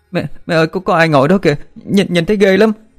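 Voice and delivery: very high, terrified, panicked pleading cry. A daughter, just woken, cries out to her mother in a panicked voice. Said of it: "nói bằng giọng hoảng loạn".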